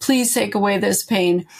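put-on, imitated pleading voice. Retelling a past prayer to another speaker: retelling own begging. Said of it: "just begging".

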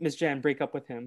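plain

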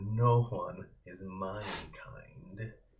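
very slow, scornful, disdainful drawl. Voicing Maggie answering whether he is her kind: disdainful. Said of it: "the first look of real disdain in her eyes".

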